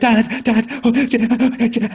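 put-on panicking child voice, very high, very slow, drawn-out. Acting out a five-year-old panicking to make a point: imitating a panicking child. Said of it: "five-year-old panicking, go".

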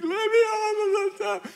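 put-on very high, loud, shrieking small child scream. Retelling a child squirming on a step: imitating a child screaming.

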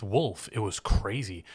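normal talking voice

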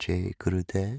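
very soft, hushed, gently breathed-out voice. Showing how they say the traditional meditators' salutation: very soft voice. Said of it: "I'm saying it in a very soft voice".

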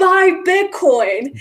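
sudden, high-pitched shouted yell. Retelling how a guy at a bar yelled before leaving: imitating someone yelling. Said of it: "he gets up and he yells".

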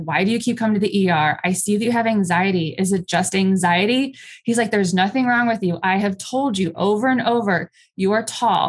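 ordinary delivery

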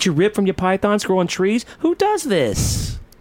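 put-on neurotic New Yorker voice. Scolding a wrestler in a comedy bit: female Woody Allen impression. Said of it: "a female Woody Allen".

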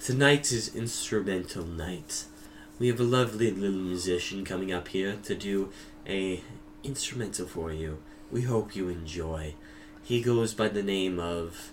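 low, soft stage announcer voice.

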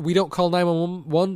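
ordinary delivery

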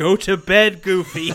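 loud, drawn-out frustrated shout. Gamer retelling how they yelled at Goofy in the game: retelling shouting at the screen. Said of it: "I just kept shouting at the screen".

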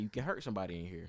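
plain

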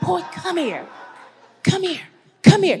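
high, loud, hushed, barely held-in stage whisper. Retelling a church lady calling a boy over to her, imitating an attempted whisper. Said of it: "she's trying to whisper".

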